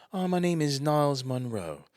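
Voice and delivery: put-on British accent. Phoning a pizza place to order and giving a name, fake British accent. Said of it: "I called with this fake British".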